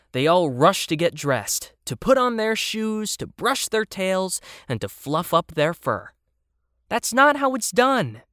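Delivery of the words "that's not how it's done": annoyed, irritated, put-out tone, pitched up. The narrator, watching playmates rush to get dressed, speaks in irritation. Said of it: "I said in irritation".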